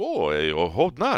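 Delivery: put-on slight French Canadian accent, slow drawl. Retelling what a fighter said to another fighter: imitating Olivier Aubin-Mercier's French Canadian accent. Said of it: "he gave his little French Canadian accent".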